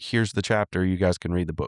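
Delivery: ordinary delivery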